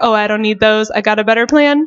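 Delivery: ordinary talk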